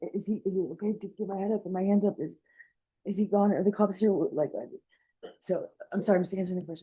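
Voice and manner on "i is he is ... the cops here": whispered delivery, quieter. Retelling what was asked while scared and face down: retelling a whisper. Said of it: "whispered, I was like".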